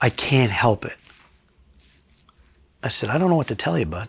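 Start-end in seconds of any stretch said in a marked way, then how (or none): 0.0-1.0 acted, tearful crying, words pushed through sobs. Retelling what a man said as he started to cry, imitating someone crying. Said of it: "he starts to cry and he goes".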